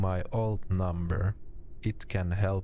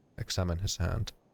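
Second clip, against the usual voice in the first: ordinary delivery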